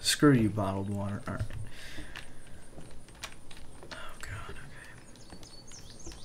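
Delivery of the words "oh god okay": soft, unvoiced whisper. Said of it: "That I'm whispering".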